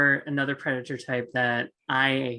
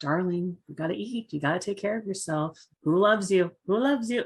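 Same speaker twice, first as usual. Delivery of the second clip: mock sweet, high, tuneful, loving voice; 5 semitones higher than usual. Retelling the voice a player hears in her head in a game, imitating a sweet tonal voice. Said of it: "this like sweet tonal voice".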